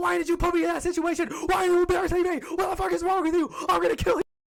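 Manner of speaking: very loud, shrill, furious, all-out screaming. Retelling how a boy yelled at a girl in front of everybody: imitating someone yelling. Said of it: "and he yelled at her?".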